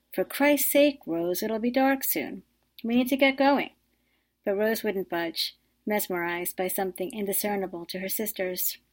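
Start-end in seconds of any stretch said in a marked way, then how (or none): 0.1-3.7 calling out in a raised, high-pitched yell. Maria calls to her sister Rose, who is in the water: yelling. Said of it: "Maria yelled".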